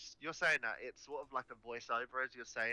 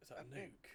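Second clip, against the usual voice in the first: hushed whisper, quieter; 12 dB quieter than usual. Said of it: "whispering to each other".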